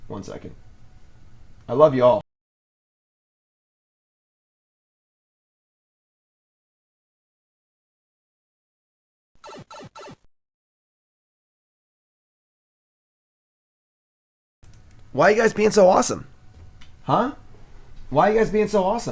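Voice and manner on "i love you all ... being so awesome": emotional, choked up, near tears, pitched high. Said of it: "I need a tissue".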